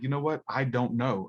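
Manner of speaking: plain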